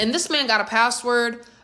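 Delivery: ordinary delivery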